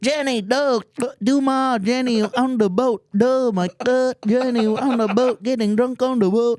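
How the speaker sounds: very high-pitched put-on Vietnamese accent. Retelling teasing a friend about accents: imitating a vietnamese accent. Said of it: "I started doing that to her".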